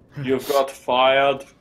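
clumsy, unconvincing fake Austrian accent. Trying out a line after admitting there are many accents you can't do, in a bad Arnold accent. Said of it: "Apparently neither can you".

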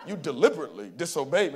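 low masculine voice. Quoting a father speaking to his son Simba, deep James Earl Jones voice. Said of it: "It's that deep, manly voice".

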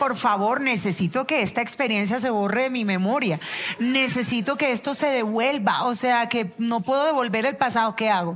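ordinary talk

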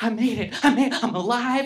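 mock trembling, shaky, wired-up voice. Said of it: "I'm shaking".

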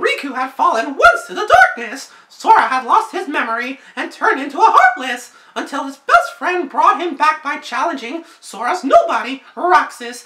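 high, slow, swooping, sing-song cartoon voice. Reading a character description aloud: Mickey Mouse voice. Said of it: "I should probably read this in my Mickey Mouse voice".

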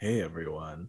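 very low, hushed, sultry creaky vocal fry. Tell everyone how Azario sounds by imitating Azario's sultry vocal fry. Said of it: "He's got a little bit of a sultry".

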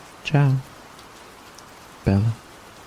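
giggling, laughing through the words. Speaker signs off after her own teasing joke, giggling while talking. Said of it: "She giggled at her own joke".

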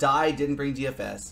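plain

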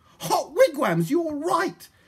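very high-pitched, loud yell. Friday, told by Polly they have found the robbers' trail, shouting. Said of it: "shouted Friday".

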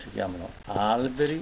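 ordinary delivery

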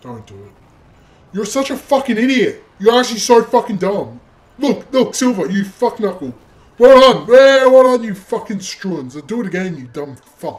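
very angry, fed-up ranting. Watching a player fail again, cursing at them, furious. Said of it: "Oh my god, I'm so pissed".

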